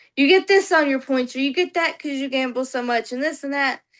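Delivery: ordinary talk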